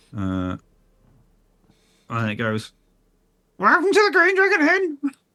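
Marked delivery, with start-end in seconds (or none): 3.5-5.1 shrill, very high parrot squawking voice. Voicing a bird flying past in a bar: squawking bird voice. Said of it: "squawk as it sort of, like, goes past you".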